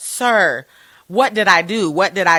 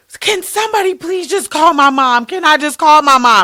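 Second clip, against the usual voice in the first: mock, very high-pitched, frightened begging tone; 10 semitones higher, 7 dB louder than usual. Retelling a video of a young woman begging officers: imitating a scared plea. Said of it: "you hear it in her voice that, like, she is scared".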